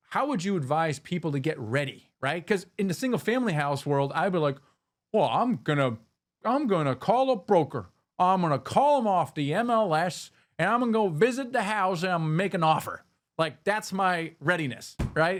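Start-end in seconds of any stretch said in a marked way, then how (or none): 5.1-13.0 put-on speaker's own natural Southern accent. Retelling own past plan to buy a house: imitating own southern accent. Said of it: "is that how you, you approach them with a Southern accent?".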